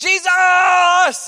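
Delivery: high, loud crying out.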